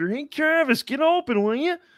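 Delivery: way up high, kept soft. Doing an impression after another speaker suggests it: Patrick Mahomes impression. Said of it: "or Patrick Mahomes".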